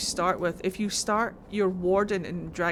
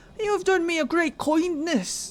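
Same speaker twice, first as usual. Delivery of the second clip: fake stage Irish accent, much higher, louder; 10 semitones higher, 5 dB louder than usual. Mocking the irish accent people always put on, the speaker does a fake stage irish accent. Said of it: "that Irish accent that people try to put on all the time".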